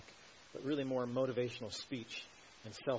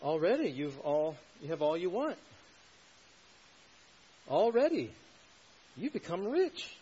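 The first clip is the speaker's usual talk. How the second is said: acted sarcasm, higher, louder, slower; 6 semitones higher, 8 dB louder than usual. Quoting Paul's verse to the Corinthians, deliver it as a retold sarcastic quote. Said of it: "You hear the sarcasm?".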